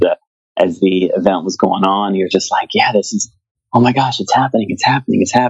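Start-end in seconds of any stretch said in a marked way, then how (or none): 2.7-5.5 mock fast, tearful, overwhelmed happy gushing. Retelling the listener's reaction during their event, imitating tearful joy. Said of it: "tears of joy running down your face".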